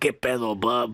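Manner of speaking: very low, gravelly rasp. Joking about playing Wolverine, the speaker does a raspy Wolverine voice. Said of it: "I already got the raspy voice to be Wolverine".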